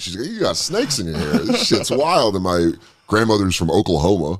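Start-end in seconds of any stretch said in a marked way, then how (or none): 0.3-2.3 play-acted giggling throughout, laughing with swooping amazement. Retelling what a relative said while on acid: imitating someone laughing while talking.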